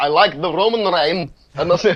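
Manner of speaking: poor, broken put-on Russian accent. Imitating a man who speaks broken English, in the worst Russian accent. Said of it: "It's just like the worst Russian accent".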